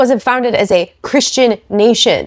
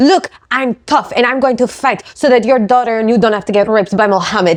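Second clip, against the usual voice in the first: mocking, put-on fake Russian accent. Mocking a woman's statement, in a mocking impression with a Russian-sounding accent. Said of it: "now it sounds like I'm Russian".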